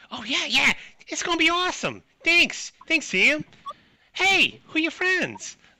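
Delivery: very high, loud cartoonish character voice. Narrating a game, voicing a woman who tastes the weeds, in a cartoon-character voice. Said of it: "she's not as annoying in, as Fran Drescher".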